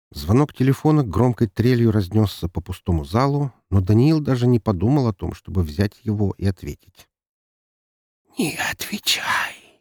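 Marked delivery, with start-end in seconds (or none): 8.4-9.6 soft, hushed whisper by a chorus of voices. A chorus of voices from the shadows tells a man not to answer; whispered. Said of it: "прошептал хор голосов из тени".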